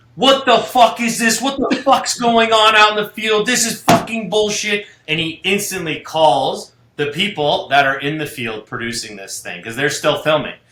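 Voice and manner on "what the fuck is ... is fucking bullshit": put-on enraged screaming rant, loud and high. Retelling how the company head reacted to bad footage: imitating someone screaming. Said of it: "starts losing his mind and screaming".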